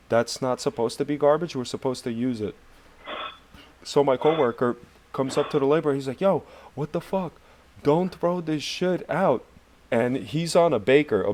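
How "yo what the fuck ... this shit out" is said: heated, pitched-up, angry scolding. Retelling a coworker telling a laborer not to throw something out: imitating someone yelling. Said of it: "yelling at him and shit".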